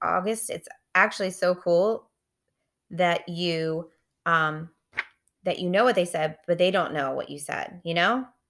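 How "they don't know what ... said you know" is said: plain reading voice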